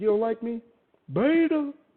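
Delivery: very loud, high-pitched, drawn-out host voice. Imitating the host's reaction to a caller who disliked him: imitating the host's voice. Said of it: "I can hear it in his voice. He's like".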